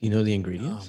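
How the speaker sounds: hushed whisper. Asking another speaker about a cocktail's ingredients: whispering. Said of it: "don't whisper at me".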